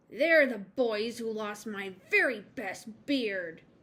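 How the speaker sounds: fierce, loud growling troll voice. As the troll in a story, answering a nervous girl's question, growling. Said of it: "growled the Troll".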